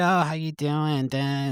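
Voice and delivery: put-on drawn-out Boston accent. Retelling running into a disliked lady by the cards, in a put-on Boston accent. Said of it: "In her fucking Boston accent".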